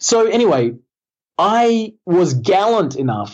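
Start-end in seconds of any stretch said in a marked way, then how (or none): 1.4-3.3 gallant drawn out slow and high, sarcastic. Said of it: "I'll underline the word gallant 'cause it's sarcastic".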